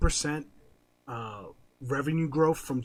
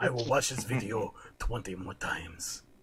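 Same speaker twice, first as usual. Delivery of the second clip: crude put-on Japanese accent; 4 semitones lower, 4 dB quieter than usual. Imitating a japanese businessman secretly watching the podcast: racist impression of a japanese man. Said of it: "my racist impression of a Japanese man".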